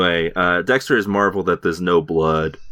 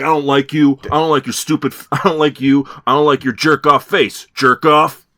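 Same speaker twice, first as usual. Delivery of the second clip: put-on furious yelling, higher and louder; 9 semitones higher, 6 dB louder than usual. Retelling how Doakes screams at Dexter: imitating Doakes screaming. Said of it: "this guy is on level ten at all times".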